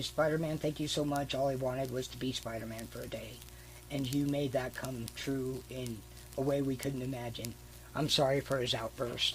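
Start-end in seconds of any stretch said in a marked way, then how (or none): none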